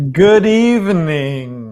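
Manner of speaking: very loud booming vampire voice, "evening" drawn out. Opening the podcast episode and greeting listeners: vampire voice. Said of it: "Why'd you just say that like a vampire?".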